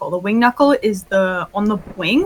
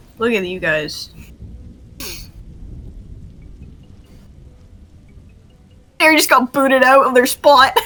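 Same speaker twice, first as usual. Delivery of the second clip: speaking through laughter, higher; 3 semitones higher than usual. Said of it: "Sorry, I shouldn't laugh".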